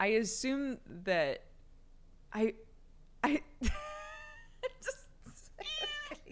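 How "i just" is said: high-pitched, breaking laughter. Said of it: "I'm laughing because".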